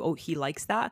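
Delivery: normal talking voice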